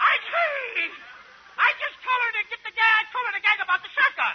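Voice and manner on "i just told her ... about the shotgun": put-on kid brother character voice. Playing the kid brother in a comedy scene: high kid-brother voice. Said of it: "Ah, the high voice".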